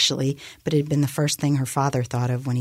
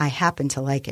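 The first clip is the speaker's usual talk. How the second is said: usual speaking voice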